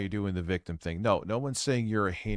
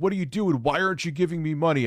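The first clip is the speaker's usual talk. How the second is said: loud shouting; 8 semitones higher, 6 dB louder than usual. Retelling how another speaker yelled at the audience: imitating someone yelling. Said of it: "you were yelling at your audience".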